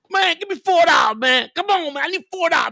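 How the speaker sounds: high, pleading, begging voice.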